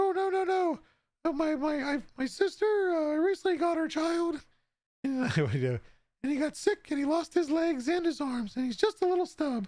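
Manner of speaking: pitched way up, tiny voice. Retelling the restaurant scene where a shark is told to eat the shrimp, in Shark Tale shrimp voice. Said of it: "it reminded me of the shrimp from the movie".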